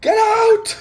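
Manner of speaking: put-on muffled yelling. Imitating a character shouting from inside a room at night: muffled shout. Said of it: "you just hear a muffled".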